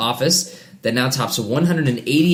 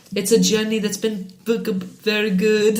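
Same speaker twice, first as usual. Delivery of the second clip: put-on Israeli-accented voice, higher; 9 semitones higher than usual. Reading a celebrity's post aloud when asked to: Gal Gadot voice. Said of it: "Read it like Gal Gadot".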